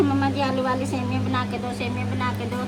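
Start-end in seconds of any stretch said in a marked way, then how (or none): none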